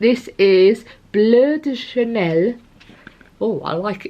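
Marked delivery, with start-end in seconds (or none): 0.0-2.5 playful put-on French accent, high and slow. Naming a french perfume while showing items: put-on french accent. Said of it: "I always put, like, on a French accent".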